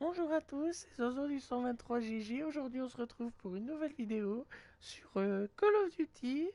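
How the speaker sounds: put-on squeaky, very high, tiny little kid voice. Recalling an old channel, imitating own old little-kid gamer voice. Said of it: "j'avais encore une toute petite voix".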